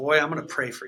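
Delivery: put-on sweet Southern woman voice. Retelling what a woman behind the counter said, imitating a sweet southern woman.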